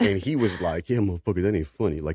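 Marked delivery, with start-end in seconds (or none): 0.9-2.0 put-on half-laughing, not quite laughing. Retelling a friend's reply after his fall, imitating someone half-laughing. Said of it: "laughing, but not laughing".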